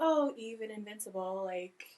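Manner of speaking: normal talking voice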